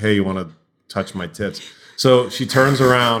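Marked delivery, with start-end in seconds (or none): 0.0-1.6 mock, put-on passive-aggressive tone. Retelling what a woman said to him in the dark, mock passive-aggressive. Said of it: "it was like a passive aggressive".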